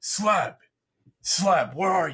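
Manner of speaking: very loud, high-pitched calling out. Playing a character on a boat, calling out to someone with loud yelling. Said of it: "in a loud voice you'll just hear someone yelling out".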